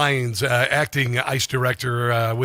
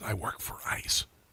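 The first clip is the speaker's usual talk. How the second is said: whispered mutter, hushed, barely voiced; 4 semitones lower, 14 dB quieter than usual. Retelling an ICE agent in civilian clothes answering what he does, hushed under his breath. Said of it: "he hushed under his under his breath".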